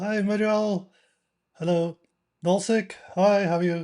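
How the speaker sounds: nasal, stuffy voice. Speaker greets people as they join, nasal, blocked nose. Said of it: "Apologies if I sound nasal".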